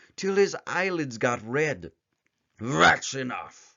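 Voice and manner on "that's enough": gruff, rough, growling bear voice. Narrator reading the bear's line in a story, growling bear voice. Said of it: "growled the bear".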